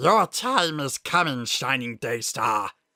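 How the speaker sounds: growling voice. Reading a monologuing character's line as he stares up at the sun, growled. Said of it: "he growled through a mouth of sharp teeth".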